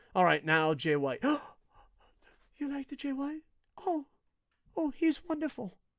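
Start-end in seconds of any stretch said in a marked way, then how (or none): 2.5-5.7 exaggeratedly gentle, very high, soft, soothing, placating voice. Changing tone for someone treated as very sensitive: exaggeratedly gentle, soothing tone. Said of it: "act like you know they're the most sensitive person in the world. Like I'm gonna actually change my tone".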